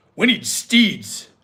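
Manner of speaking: most solemn, grave, deadly serious tone. Retelling what he said at the table: imitating a most serious tone. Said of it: "with the most serious tone he could muster".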